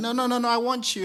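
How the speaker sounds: very high, loud, weepy pleading cry. Retelling a partner's plea as the speaker walked away: imitating someone crying. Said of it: "she's crying like".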